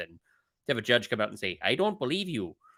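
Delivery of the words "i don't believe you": put-on Wisconsin accent, pitched up. Retelling what the judge told a lawyer: Wisconsin accent. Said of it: "in a Wisconsin accent".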